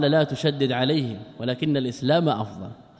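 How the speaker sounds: ordinary talk, nothing marked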